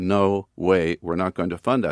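ordinary talk

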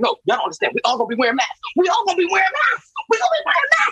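play-acted, very high, swooping, worked-up, excited, rattled off. Retelling warning the kids about lockdowns, retelling an excited warning. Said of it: "I'm getting excited".

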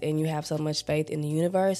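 ordinary talk

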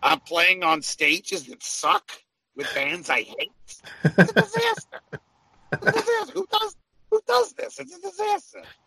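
very high character voice, pitch swinging wildly. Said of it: "that's a really good [name]".

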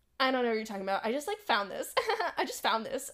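innocent-sounding, convincing voice. Retelling a friend denying going to Taco Bell: imitating Shelly's denial. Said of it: "You're doing it way too good".

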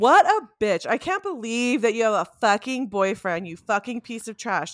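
fake, vicious, nasty, insulting ranting tone. Jokingly performing the insults the other speaker supposedly wants: mock insulting rant. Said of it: "Does that sound better?".

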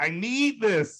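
anguished, pleading tone. Retelling what a man said to him, imitating a pained voice. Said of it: "he said with the most pained voice".

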